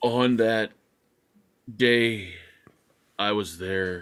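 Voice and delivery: very slow delivery, every word drawn out. Mocking a witness's slow half-hour answers in court: imitating Johnny Depp testifying. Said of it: "Depp talks like he's mentally challenged".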